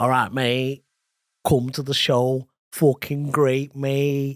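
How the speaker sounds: Mancunian Manchester accent. Prompted to do a Mancunian accent, the speaker invites listeners to the show. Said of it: "your Mancunian accent".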